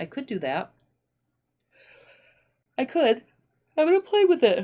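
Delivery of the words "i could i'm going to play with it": speech while yawning, pitched up. Speaker answers Leah's question about serging the strip, yawning while talking. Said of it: "I'm sorry, I'm yawning".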